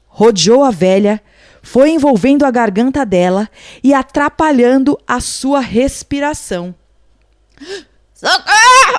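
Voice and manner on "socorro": very high, loud, sudden shout. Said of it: "socorro gritou ela".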